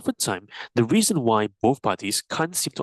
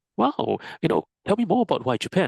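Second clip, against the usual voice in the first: bright, upbeat, pitched-up curious tone; 6 semitones higher than usual. Demonstrating an interested reaction when someone names their choice, upbeat, uplifting response. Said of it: "If you have this upbeat, uplifting response".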